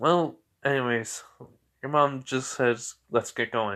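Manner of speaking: ordinary delivery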